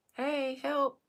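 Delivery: friendly, easygoing, nice, polite delivery. Showing the different ways they say things, the speaker first says it nicely. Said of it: "This is me saying it nicely".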